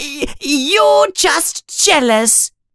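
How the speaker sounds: very high, frightened, scared voice. Next to Crabbe and Goyle, Colin answers Malfoy, in a high, scared voice. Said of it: "says Colin in a high, scared voice".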